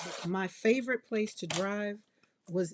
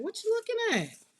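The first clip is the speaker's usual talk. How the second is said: very high, funky, sassy, challenging voice. Recalling how she used to react to people staring: mock sassy sister-girl attitude. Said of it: "I was that sister girl that would be like".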